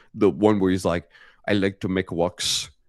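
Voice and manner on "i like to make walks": slow, goofy put-on German accent, guy voice. Recalling a goofy German video maker: imitating a goofy German video maker. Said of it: "the German dude that does all the goofy".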